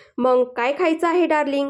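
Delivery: ordinary delivery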